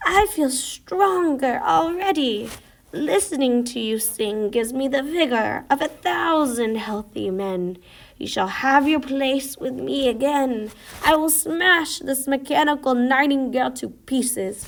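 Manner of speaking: rasping imperial voice. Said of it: "I really popped off with the rasping emperor".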